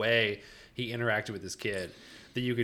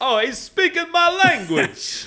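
fake New York accent, higher and louder; 13 dB louder than usual. Joking about a fellow New Yorker: put-on New York accent. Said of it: "This is my New York accent".

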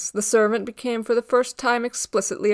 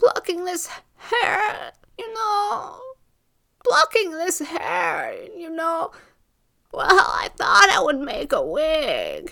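high, gasping, croaking crow-call voice; 7 semitones higher than usual. Narrator reading the old woman's answer to the servant: gasping crow's-call voice. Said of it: "a voice like a crow's call came, gaspingly".

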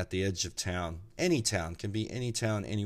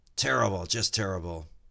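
joking mock shout. Telling a joke, acting out the driver's reply to an old guy, retelling a shout. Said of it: "the driver shouts back".

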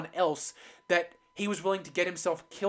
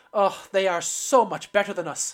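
put-on Irish accent in a raised voice; 6 dB louder than usual. Retelling a show scene, the speaker quotes a droid watching others leave: Irish accent. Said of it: "you just wanted to use your Irish accent there".

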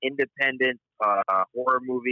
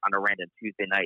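ordinary talk, nothing marked

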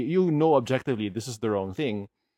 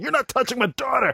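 very high, screaming shriek; 12 semitones higher than usual. Describing a reaction video of a player flamethrowing the doctor, retelling a scream. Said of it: "He's like screaming".

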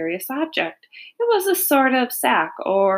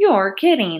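ordinary delivery

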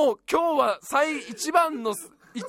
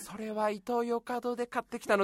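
put-on lonely grandma voice, much lower, quieter; 2 semitones lower, 8 dB quieter than usual. Acting out a grandma's imagined reply, imitating a lonely grandma. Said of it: "おばあちゃんがすごい寂しそうに".

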